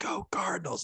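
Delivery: whispered, breathy, hushed cheer. Retelling how a Cardinals fan at the game kept screaming: imitating a fan screaming. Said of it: "screaming at".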